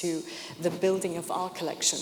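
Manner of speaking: stress on our, our said level and plain. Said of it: "to the building of your collection".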